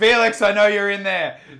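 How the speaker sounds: put-on drunken, boozy yell, high and very loud. Describing a scene from an audio drama, the speaker retells a character's drunken shout. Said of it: "and then just shouts".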